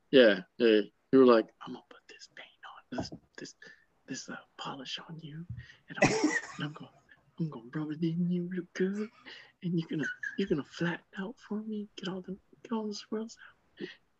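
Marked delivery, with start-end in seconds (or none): 1.6-13.8 very high, soft, hushed whispery talk. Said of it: "little paint whisperer".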